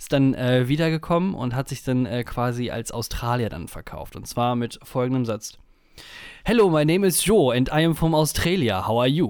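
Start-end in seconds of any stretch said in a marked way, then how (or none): 6.4-9.3 put-on loud, thick, heaviest possible German accent. Retelling a man back from Australia introducing himself, in a very German accent. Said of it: "in dem deutschesten, deutschen Akzent".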